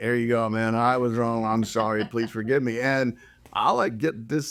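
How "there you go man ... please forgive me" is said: put-on insincere, mocking, sarcastic tone. Showing what he says while pointing to his tattoo: mock apology, sarcastic. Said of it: "it's the tone that you used... It sounds like you're being sarcastic".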